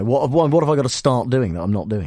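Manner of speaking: plain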